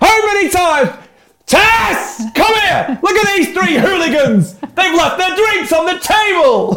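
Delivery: very high, loud, shouting scolding-parent voice. Acting out telling off strangers in a pub: imitating a shouting parent. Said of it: "you're quite loud".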